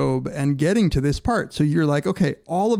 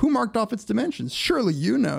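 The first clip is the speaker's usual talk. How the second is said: needling, sarcastic, challenging tone, pitched up; 7 semitones higher than usual. Retelling god's reply that changes the subject, retelling god's sarcasm. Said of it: "He's being a sarcastic prick".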